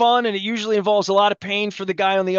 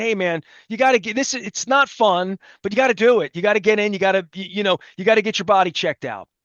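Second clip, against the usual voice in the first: ordinary talk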